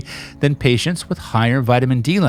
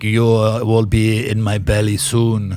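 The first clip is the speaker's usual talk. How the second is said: mock sinister Romanian accent, much lower; 3 semitones lower than usual. Mocking how the other speaker sounds, romanian murderer accent. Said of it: "you sound like like a Romanian like uh".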